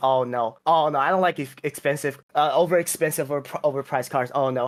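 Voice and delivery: ordinary talk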